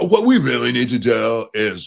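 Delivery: laid-back, slow, drawled surfer-dude voice. Quoting a Democrat, the committee's ranking member, in a surfer voice. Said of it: "I don't know why I'm giving a surfer voice".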